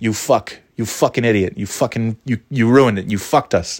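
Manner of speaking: ordinary delivery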